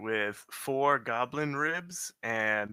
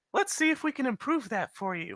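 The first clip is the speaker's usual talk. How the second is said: very high, quick, put-on elf woman voice; 12 semitones higher than usual. Player turning to the fish person beside them, in a female elven voice. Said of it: "in a uh, female elven voice".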